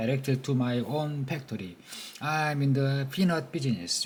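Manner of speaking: ordinary delivery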